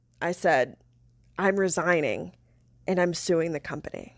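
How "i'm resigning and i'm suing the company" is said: hushed half-whisper under the breath. Retelling telling a coworker in the break room: retelling own half-whisper. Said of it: "whispered it".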